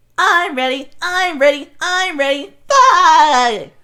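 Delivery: shrill, very high, loud cartoon voice, "bye" stretched. Explaining how they pitch cartoon voices, demonstrating the SpongeBob voice. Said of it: "SpongeBob is just super high pitched".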